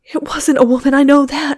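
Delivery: gasped out. Jane, frightened, speaks as David Gleason nears the pantry door, gasping. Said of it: "gasped Jane".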